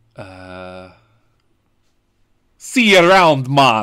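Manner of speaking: put-on very loud, very slow, bellowing Jamaican accent. Taking the show out as Nicolas Cage: Nicolas Cage doing Jamaican accent. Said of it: "Was that him doing his Jamaican accent?".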